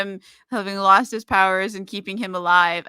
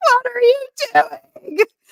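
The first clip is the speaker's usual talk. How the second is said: put-on very high, shrill, loud scream; 5 dB louder than usual. Retelling how he screamed at the computer screen: imitating a scream. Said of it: "he's screaming at the computer screen like".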